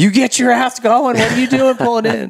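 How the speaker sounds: put-on very high-pitched, angry screaming. Retelling a dad yelling at him for pulling off the track: imitating someone screaming. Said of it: "screamed at me".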